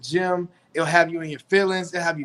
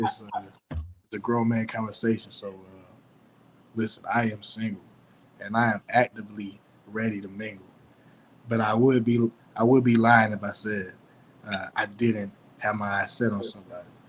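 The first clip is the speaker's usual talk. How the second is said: very deep, low put-on grown-man voice; 8 semitones lower than usual. Answering whether he is single, letting his voice get deeper. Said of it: "I'm gonna let my voice get a little deeper now".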